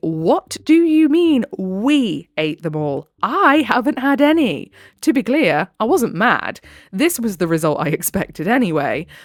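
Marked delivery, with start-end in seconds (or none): 0.0-4.7 acted-up outrage, high, drawn-out, incredulous. Retelling a mock complaint about eaten fries: retelling a loud incredulous outburst. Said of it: "incredulously announcing loudly".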